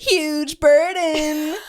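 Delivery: put-on character voice, very high pitch and loud. Asked to say huge burden in the Rigby voice: Rigby voice. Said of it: "Say huge burden in the Rigby voice".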